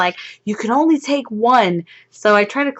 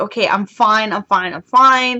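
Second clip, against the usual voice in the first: put-on nervous, reassuring tone, slower. Retelling being locked into a ride seat, the speaker acts out nervous self-reassurance. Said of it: "And my heart's racing".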